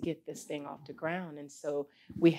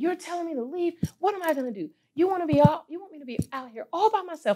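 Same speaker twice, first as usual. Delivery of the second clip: very high, shrill yell hurled upward; 12 semitones higher, 7 dB louder than usual. Telling of being alone in their truck, re-enacting yelling at God. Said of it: "And I'm yelling at God".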